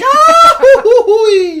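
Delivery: very high, loud cartoon yell, pitch swooping way up. Explaining the sound a character makes when he falls down, doing Goofy falling yell. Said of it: "Goofy makes when he falls down".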